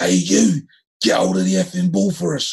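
mock booming angry yell. Retelling how someone yelled at the speaker after losing the ball: booming voice. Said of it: "I heard this booming voice".

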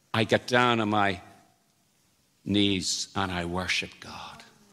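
put-on deep, low, soft, refined educated English accent. Retelling what a man said to Larry, in his educated English sort of accent. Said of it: "in his educated English sort of accent".

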